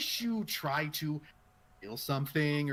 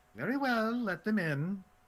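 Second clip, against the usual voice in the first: weary, worn-out, tired, higher feminine voice; 5 semitones higher than usual. Game narrator voices a woman answering from behind a door: tired feminine voice. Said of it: "but tired".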